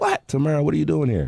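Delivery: play-acted, very high, shrill screamed-out call. Retelling how someone next door screamed on seeing her enter: imitating Chris Lighty screaming. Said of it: "he just screamed out".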